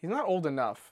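ordinary delivery

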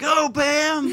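mock excited, very high cheering yell. Retelling cheering someone out the door: imitating someone yelling. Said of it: "I was back there yelling".

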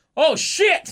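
very high, sudden, loud blurted yell. Retelling a quiet match moment, imitating Cross yelling. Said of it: "he just yells".

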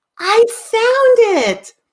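very high, elated, thrilled, stretched-out cry. Searching the house, retelling someone calling from another room: elated, joyful voice. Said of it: "I hear an elated, joyful voice".

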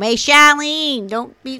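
put-on loud, heavy Boston accent. Speaker imitates an aunt greeting them at home, in a boston accent. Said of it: "But they do sound like that".

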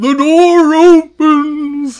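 very high, shrill, loud, booming cartoon voice. Imitating a game character who sounds like Patrick Star: Patrick Star voice. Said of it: "He does sound like Patrick Star from SpongeBob".

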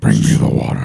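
very low, rough, guttural throaty voice. Imitating what characters in a story say, in a guttural voice. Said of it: "That guttural voice that comes out".

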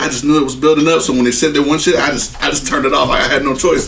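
ordinary talk

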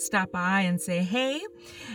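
ordinary delivery

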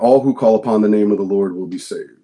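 ordinary talk

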